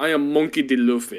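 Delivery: put-on Brazilian accent. Retelling a story with another speaker and voicing its character, Luffy with a Brazilian accent. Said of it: "He's got like the Brazilian accent".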